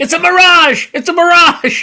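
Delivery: very high, drawn-out scream. Recalling yelling at a tv game show contestant, retelling screaming at the tv. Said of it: "I'm screaming, meanwhile, at the TV".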